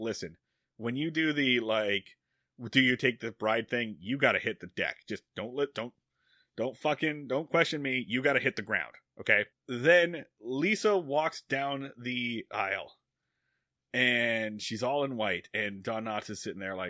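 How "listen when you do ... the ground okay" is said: hushed, half-whispered stage whisper under the breath. Retelling a movie scene where a character half-whispers to the preacher: imitating a half-whisper. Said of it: "he whispers to the preacher".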